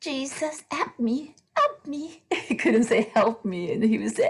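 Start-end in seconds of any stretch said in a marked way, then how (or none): 0.0-2.2 put-on high little child voice. Recalling a young boy's early words, the speaker imitates him in a little child voice. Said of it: "you would hear his little voice going".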